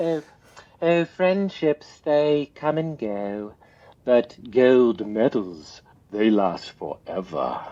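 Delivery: put-on British accent, best attempt. Quoting a saying of a British Olympic rowing coach, imitating a British accent. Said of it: "I'm doing my best British accent".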